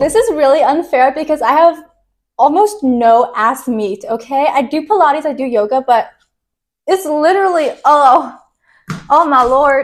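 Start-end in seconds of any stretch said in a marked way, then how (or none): 7.8-9.9 Texas Southern accent coming through. Vexed while talking about sketchbooks, speaker's southern accent slips out. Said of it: "my Southern accent comes out when I'm vexed".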